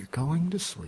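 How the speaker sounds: hushed, soft, high-pitched ASMR half-whisper close to the mic. Joking about making asmr videos for sleep: half-whispering very quietly. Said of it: "Just whispering very quietly into the mic".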